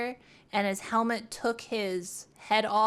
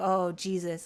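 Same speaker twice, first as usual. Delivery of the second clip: put-on stunned, dazed voice, lower; 3 semitones lower than usual. Retelling a cop on the radio after a crash: imitating a stunned cop. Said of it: "he just sounded like he was just, like, stun locked".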